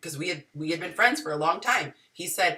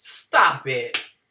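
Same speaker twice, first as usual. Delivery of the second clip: mock condescending, dismissive, talking-down tone; 6 semitones lower, 4 dB louder than usual. Imitating a man giving advice to a naive woman: imitating a condescending tone. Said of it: "he's real condescending".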